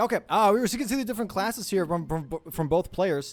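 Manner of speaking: nervous, high-pitched stammer, stumbling over words. Commentator checking out both players' classes on day one, stuttering nervously. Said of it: "I'm stuttering right now".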